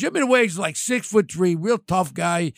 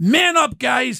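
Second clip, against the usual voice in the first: mock, high-pitched hollering yell; 6 semitones higher, 4 dB louder than usual. Retelling what was said on a call to the guys: retelling a yell. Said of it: "I'm yelling at them".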